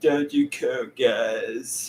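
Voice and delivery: very slow, drawn-out, stretched drawl. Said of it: "that was just my impression of him".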